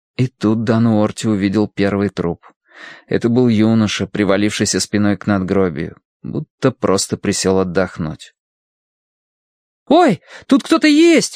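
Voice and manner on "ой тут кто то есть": very high, sudden crying out. A boy riding with a companion in a story, exclaiming. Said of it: "воскликнул Колин".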